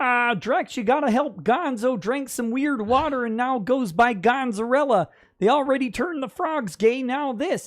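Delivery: cartoon frog puppet voice. Reading a chat message aloud as written: Kermit voice. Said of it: "in Kermit voice".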